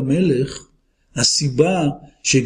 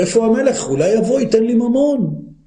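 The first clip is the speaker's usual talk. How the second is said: mock shout, higher pitch; 6 semitones higher than usual. Retelling what he shouted back then, retelling a shout. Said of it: "ואז אני צועק".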